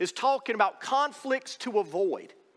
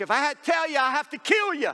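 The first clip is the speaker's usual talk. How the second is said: mock shout, high-pitched yelling; 5 semitones higher, 4 dB louder than usual. Retelling a joke where the magician yells back: retelling a yell. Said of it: "the magician yelled back".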